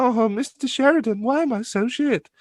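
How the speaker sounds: put-on very high child's voice. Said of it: "He turned around to a kid, he's like".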